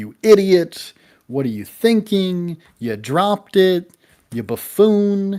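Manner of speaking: mock furious, loud, rising angry berating shout. Describing coworkers scolding one who dropped something: mock angry shouting. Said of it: "they are shouting like".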